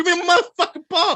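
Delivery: high, loud, mock outburst blurted through laughter. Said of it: "Luke is gonna say".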